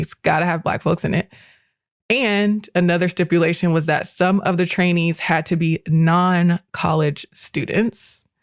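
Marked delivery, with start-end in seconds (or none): none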